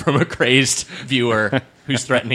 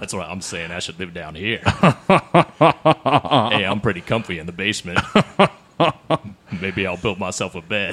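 exaggerated put-on deep register, lower; 4 semitones lower than usual. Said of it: "Go a little deeper".

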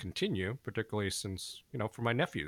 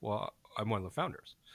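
quick, matter-of-fact deadpan understatement. Retelling how a founder answered a guest's question: retelling a deadpan reply. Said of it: "Peter just deadpan".

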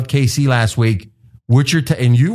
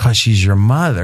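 put-on cracked, breaking voice; 4 semitones lower than usual. Retelling a line from a movie scene, imitating a cracking voice. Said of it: "he said it like his voice was cracking".

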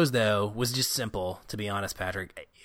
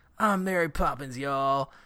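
gruff country drawl, full of joy and pride; 4 semitones higher than usual. Repeating Yondu's line to show how it comes out, gruff country-fied Yondu voice. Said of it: "his just gruff, country-fied voice".

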